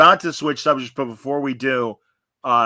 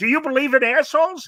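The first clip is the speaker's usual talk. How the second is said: mocking play-by-play announcer voice, getting higher; 11 semitones higher than usual. Mocking a sports announcer in a put-on voice: Al Michaels voice. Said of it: "I gotta do my voices".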